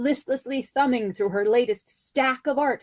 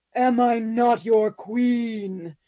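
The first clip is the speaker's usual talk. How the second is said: very slow, dark, resounding goblin voice. She challenges her spouse over a magazine in her dark, resounding goblin voice. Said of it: "She put on her darkest, most resoundifying goblin-y voice".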